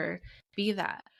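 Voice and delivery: ordinary talk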